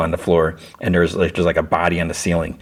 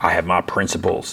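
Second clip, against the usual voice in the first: mock-sarcastic delivery. Retelling a man's reply to his mother, retelling a sarcastic reply. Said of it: "And like sarcastically".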